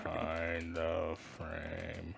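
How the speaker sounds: spooky, scary tone, very deep, low, very soft. Repeating the title Behind the Frame to the others, in a very scary tone. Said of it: "Very scary tone".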